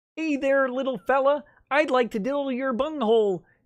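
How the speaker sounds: high cartoon frog puppet voice. Showing how he will read a case's dirty parts, in Kermit the Frog voice. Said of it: "in Kermit voice for you".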